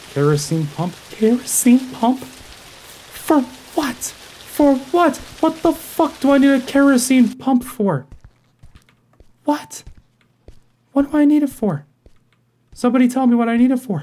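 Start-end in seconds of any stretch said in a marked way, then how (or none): 1.1-14.0 very high, frazzled, frantic panicked voice. Speaker with someone behind them, starting to sprint, panicking. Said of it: "I'm panicking".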